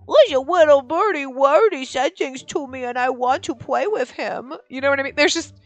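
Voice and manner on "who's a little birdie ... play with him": put-on sugary, cutesy little baby-talk voice. Showing the difference from normal talk to a bird: cute baby-talk voice. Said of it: "that tone of voice".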